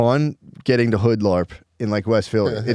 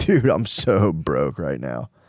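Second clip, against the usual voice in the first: mock chuckling, laughing through drawn-out words; 6 semitones lower than usual. Retelling how college students bragged about being broke: imitating someone laughing while talking. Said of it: "of people in college laughing, going".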